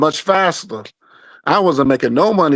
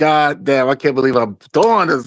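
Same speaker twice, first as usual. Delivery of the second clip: mock angry complaining voice. Retelling how the other speaker complained while setting this up: imitating someone mad. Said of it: "I know you was mad".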